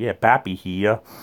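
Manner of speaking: put-on New England Boston accent. Showing how someone from boston introduces himself, in a boston accent. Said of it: "And you hear Boston, it's like".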